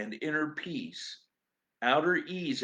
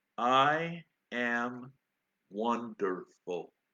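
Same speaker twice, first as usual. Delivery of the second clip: very slow, careful, each syllable said separately; 3 semitones lower than usual. Recalling asking a master how he was: retelling Ram Dass, very slowly. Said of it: "said very slowly and very carefully".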